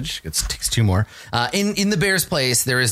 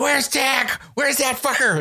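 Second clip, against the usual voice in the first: very high, screeching goblin yells; 13 semitones higher than usual. The game master voices goblins beating Winnegar with clubs: goblins screaming. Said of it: "screaming like".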